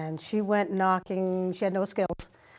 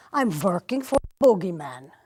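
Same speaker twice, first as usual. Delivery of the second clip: put-on Swedish accent, louder and slower; 5 dB louder than usual. Quoting a woman telling the speaker's mother about her new job, Swedish accent. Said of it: "in the Swedish accent".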